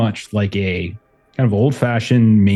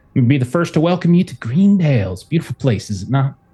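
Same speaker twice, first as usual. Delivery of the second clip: friendly local woman character voice, higher; 4 semitones higher than usual. Voicing a woman with a warm smile greeting lost strangers: voicing a friendly overall-clad woman. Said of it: "she comes up to you and is like".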